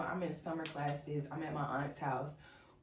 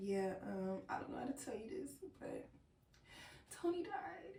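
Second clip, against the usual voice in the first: put-on teary voice, higher and quieter; 7 semitones higher, 7 dB quieter than usual. Recreating the phone call where her sister breaks the news: imitating her sister teary. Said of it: "she teary".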